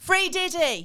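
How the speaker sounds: sudden, very loud, high-pitched shout. Retelling a random guy at the back shouting out of nowhere: imitating a sudden shout. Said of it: "He just suddenly shouted".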